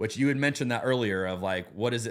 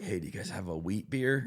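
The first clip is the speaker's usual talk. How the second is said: soft, low-pitched whisper. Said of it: "I'd like to whisper it".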